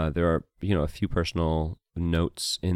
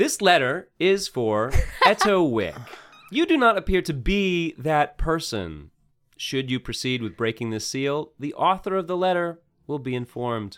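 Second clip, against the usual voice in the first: pitched-up motherly voice; 10 semitones higher, 3 dB louder than usual. In a role-play, a sealed letter speaks to the player character in the mom's voice. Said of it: "your mom's voice comes out".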